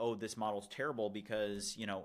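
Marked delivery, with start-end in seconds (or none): none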